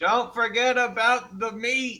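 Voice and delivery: high, drawn-out calling shout. Standing around the corner in character, yelling out to the others: yelling out. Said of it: "just yell out".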